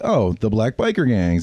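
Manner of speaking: normal talking voice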